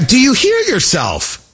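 very high voice, climbing, pushed way up. Retelling an interview answer to a question, imitating JD Vance, voice rising. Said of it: "that was not a bad impression right there".

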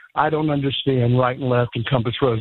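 ordinary talk

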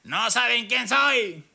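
mock belligerent drunken yell, high and drawn-out. Host retelling what a drunk man yelled at police officers: retelling a drunk man's shout. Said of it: "Él les gritaba".

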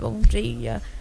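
groggy, drowsy, half-awake voice.

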